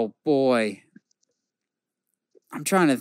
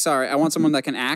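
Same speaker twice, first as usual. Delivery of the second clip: plain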